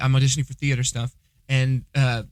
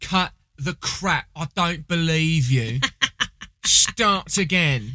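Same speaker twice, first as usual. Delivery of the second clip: put-on English accent, not the best; 3 semitones higher than usual. Retelling what Liv told the speaker, in a not-my-best put-on English accent. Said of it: "It's not my best English accent".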